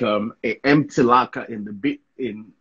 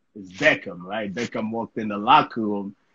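normal talking voice

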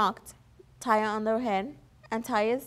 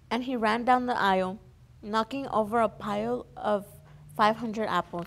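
usual speaking voice

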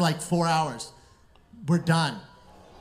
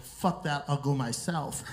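plain

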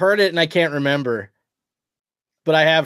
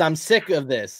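usual speaking voice

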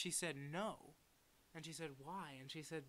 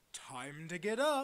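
big, booming, very loud call; 3 semitones higher, 11 dB louder than usual. Retelling how the uncle was woken one morning by a voice, booming voice. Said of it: "heard a booming voice go".

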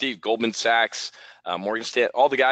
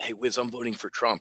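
low, hushed, confiding, conspiratorial half-whisper; 6 dB quieter than usual. Retelling what people quietly told the speaker last fall: imitating someone half-whispering. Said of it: "People would come up to me and whisper".

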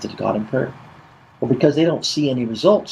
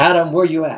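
reproachful, condemning, accusing, blaming tone; 3 semitones higher than usual. A speaker acts out God calling to man, condemning voice. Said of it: "a condemning voice saying".

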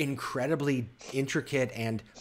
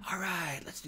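stage whisper, pitched up high; 5 semitones higher, 8 dB quieter than usual. Voicing village children at play: stage whisper. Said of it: "kind of like a stage sh-, whisper".

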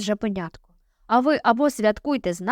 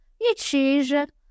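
jeering, mocking, taunting bully's tone; 3 semitones higher than usual. Narrator reads an older brother questioning the little wolf cub, mocking. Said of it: "глузливо спитав інший брат".

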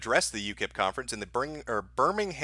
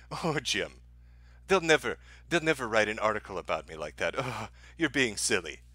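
mock smug, amused, chuckling, dismissive tone; 3 semitones lower than usual. Mocking what Sargon said on his last live stream, in a mock-smug Sargon voice. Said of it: "smugly chuckle during his last live stream and say".

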